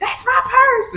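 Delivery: shrill, very high, very loud yell. Retelling a meme, imitating Bobby shouting. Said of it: "it's Bobby's like".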